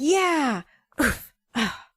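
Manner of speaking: mock loud under-breath muttered cheering. Describing a man watching sports on tv, mimicking loud under-breath cheering. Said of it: "Like under his breath, but like loud".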